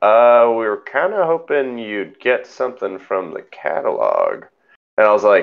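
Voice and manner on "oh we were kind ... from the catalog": acted baffled, confused, condescending, swooping tone. Retelling how she answered about paying for the car: mimicking a confused, you're-an-idiot tone. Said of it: "in like the most like confused you're an idiot kind of way".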